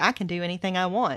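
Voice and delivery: plain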